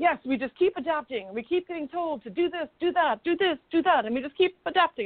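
put-on thick, laid-on Italian accent. Retelling what the owner told you last night, do Dario's thick Italian accent. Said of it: "his thick Italian accent is coming through".

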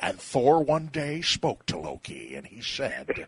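swooping, creepy grandpa voice, intoned like narration. Narrating a Thor and Loki story after mentioning John Huston: John Huston creepy grandpa voice. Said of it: "in that great kind of creepy grandpa voice".

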